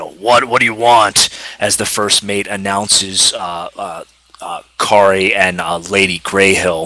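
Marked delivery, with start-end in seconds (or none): 0.0-1.3 fast, rough, gruff sea captain voice. Voicing the captain answering a knock at his door; gruff captain voice. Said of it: "in a gruff voice".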